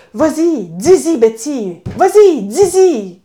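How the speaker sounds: excited, slow, drawn-out yelling. Alone in her car, cheering on a story's heroine: retelling her own shouting. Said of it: "je criais toute seule".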